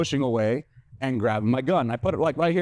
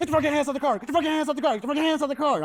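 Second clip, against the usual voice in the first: mock frantic repeated yelling, very high pitch; 11 semitones higher than usual. Retelling six cops with guns pointed at you, imitating cops going ham. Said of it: "and they are going ham".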